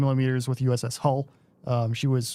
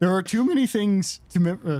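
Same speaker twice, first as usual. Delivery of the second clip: voice cracking high mid-word, word cut off; 5 semitones higher than usual. Answering viewers' questions live on stream, voice cracking. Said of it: "voice crack".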